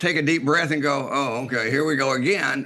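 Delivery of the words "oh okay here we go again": plain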